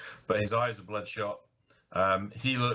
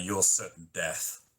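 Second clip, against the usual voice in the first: glowering thug voice. Voicing a glaring thug answering what's down the stairs. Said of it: "he kinda glares a bit and then just goes".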